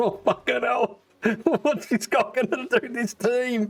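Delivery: shrill, very high put-on voice, blurted out. Imagining someone cracking cans, reacting to the player: imitating Lofty. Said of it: "He's just cracking cans going".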